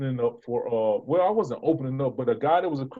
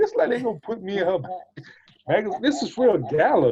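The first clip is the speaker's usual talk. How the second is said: incredulous words through a laugh, scoffing; 7 semitones higher, 4 dB louder than usual. Retelling looking through a gala magazine, acting out laughing in disbelief. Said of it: "I'm laughing like".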